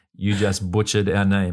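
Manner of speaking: normal talking voice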